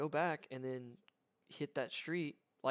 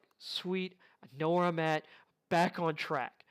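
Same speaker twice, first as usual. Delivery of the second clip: loud, mock triumphant little celebratory cheer; 2 semitones higher, 5 dB louder than usual. Retelling finding the right street after getting lost: imitating own celebratory exclamation.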